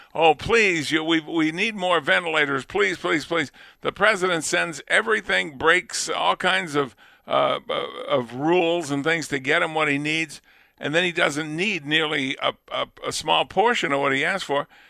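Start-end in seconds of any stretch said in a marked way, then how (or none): 0.2-3.5 mock pleading, begging. Retelling how a governor begged the president for ventilators: imitating someone begging. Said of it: "He was begging at the beginning".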